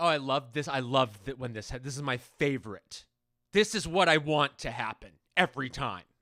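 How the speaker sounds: furious sarcasm, very loud. Acting out how they would react to tangled mic cords, in a put-on angry sarcastic tone. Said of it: "saying the opposite of how I feel in an angry tone".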